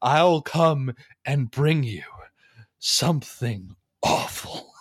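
put-on sinister, menacing, threatening tone. Retelling a man's speech warning bad kids, mock-menacing delivery. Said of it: "this part of the speech is delivered so menacingly".

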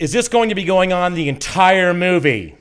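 very loud high-pitched voice. Retelling speaking up to people across the aisle during movie previews, retelling a loud remark. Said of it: "I loudly said in my louder [name] voice".

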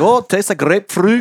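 put-on accent, rolled R. Showing another speaker how to say grapefruit: put-on accent, rolling the R. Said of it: "You gotta put an accent with".

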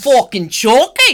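fake Irish accent, sounding Scottish. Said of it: "That was more Scottish".

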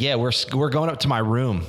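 ordinary talk

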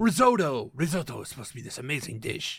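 gushing, very low put-on Spanish accent. Speaker recalls what they thought while cooking risotto at school, spanish accent. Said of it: "I don't know why I have a Spanish accent".

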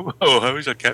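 ordinary talk

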